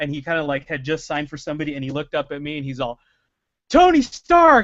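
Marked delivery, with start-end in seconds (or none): 3.7-4.6 very loud, very high yell. Retell how he looked up from signing and saw you two lines away, imitating someone yelling. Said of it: "he yelled it across the two lines".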